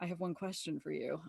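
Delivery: very quiet, soft, close half-whisper. Retelling what a flirting friend half-whispered in her ear: imitating a friend's half-whisper. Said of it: "whispers in my ear and he says".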